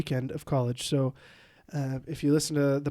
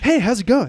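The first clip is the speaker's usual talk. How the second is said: mock very loud, high, over-cheerful voice; 8 semitones higher, 9 dB louder than usual. Retelling how a stranger after church greeted him: imitating an extremely happy guy. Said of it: "cultically happy".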